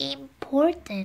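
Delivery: tiny, small, soft, high little voice. Reading Punchinello answering Eli, in a small voice. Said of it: "still with a small voice".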